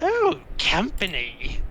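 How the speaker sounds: crone-like hag voice with swooping pitch. Narrating a game, speaker voices a hag spotting the players, in a hag voice. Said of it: "hag looks up and says".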